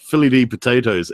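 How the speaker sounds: ordinary talk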